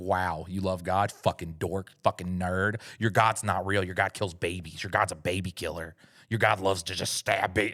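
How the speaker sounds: mock angry ranting tone. Imitating atheists mocking someone who loves God: imitating an angry atheist. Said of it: "Bro, why are you so angry?".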